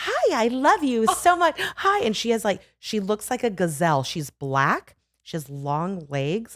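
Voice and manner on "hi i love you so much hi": very high, eager, gushing, super-friendly dog voice. Describing her friendly schnoodle, imitating Natasha the dog, mock-friendly. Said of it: "she's like so friendly".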